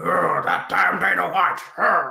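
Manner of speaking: rough-voiced, slow grumbling. Imagining someone at home cursing a rival promoter: Vince McMahon impression. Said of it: "Not too bad an impression".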